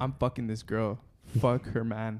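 usual speaking voice

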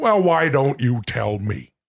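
irritated, annoyed-with-oneself tone. Asked to say the same line in different tones, the speaker says it annoyed at yourself. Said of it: "Annoyed at yourself because you forgot".

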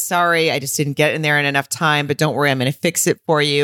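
ordinary talk

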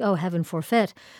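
usual speaking voice

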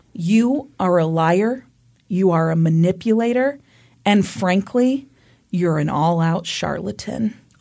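plain

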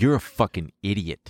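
normal talking voice

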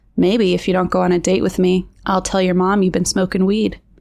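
ordinary delivery

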